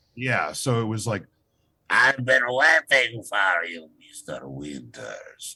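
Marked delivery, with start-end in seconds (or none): 1.9-5.6 Eastern European accent, taken slowly. Actor recalls the voice that won him a video game part: Hervé Villechaize voice, Eastern European accent. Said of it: "I did like a Hervé Villechaize with an Eastern European accent".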